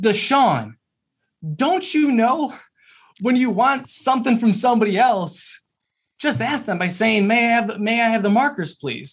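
loud, high-pitched, matter-of-fact delivery. Retelling how he addressed a kid who grabbed markers: retelling a loud statement. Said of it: "he loudly states".

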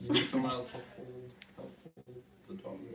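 hushed, very quiet, on the verge of tears. Struggling to get a dog to cooperate, sounding about to cry. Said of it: "You sound like you're about to cry".

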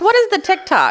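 put-on very high, cranky, crotchety old grandma voice. Asking what tiktok is, the speaker puts on a crotchety old grandma voice. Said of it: "Should I use my old grandma crotchety voice?".

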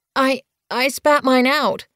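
stammered words. Narrator reading a story, a kit answering an angry question, stammering. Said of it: "Bluekit stammered".

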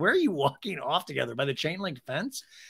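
usual speaking voice

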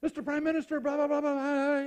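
acted agitated, frantic, loud, high, all worked up. Telling a joke where an official bursts in on two prime ministers: imitating a worked-up official. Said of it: "He's all turned up".

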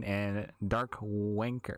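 deliberately slow, drawn-out word.

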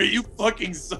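mild yell held back at half strength. Imagining yelling at a man after kicking him: pretend yelling. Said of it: "I just imagine yelling that".

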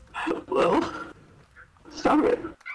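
very high-pitched, squeaky yelling.

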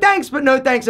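ordinary talk, nothing marked

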